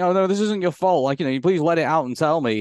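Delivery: ordinary delivery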